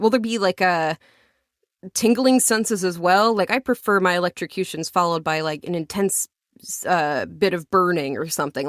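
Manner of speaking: ordinary talk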